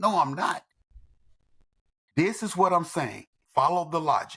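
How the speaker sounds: plain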